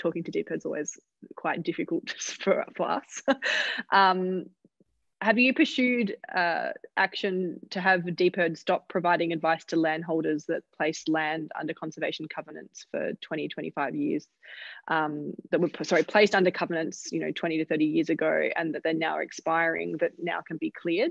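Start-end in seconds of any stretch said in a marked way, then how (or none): 0.0-3.2 laughing through the words. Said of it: "I'm laughing because".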